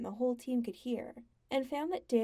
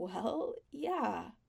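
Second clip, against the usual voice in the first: slightly strangled, choked voice. [name] answers Sam, his voice a little strangled. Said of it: "His voice was a little strangled as he said".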